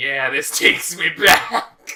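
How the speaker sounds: put-on loud, booming, high old-man voice. Speaker describes one old guy reacting to Mortal Kombat X, imitating an old man. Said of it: "there was just one old guy going like".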